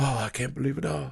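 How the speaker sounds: acted, teary, weepy, crying voice. Retelling a horror movie scene with the mom: imitating a weepy mom. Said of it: "The mom immediately is weepy".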